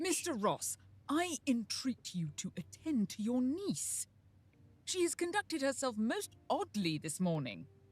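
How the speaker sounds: put-on very loud, convincing, legit-sounding British accent. After boasting about judging british accents, the speaker delivers a line in a british accent. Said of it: "it was pretty legit".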